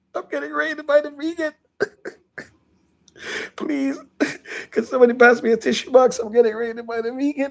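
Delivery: fake tearful wail, very high. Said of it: "I gotta start crying".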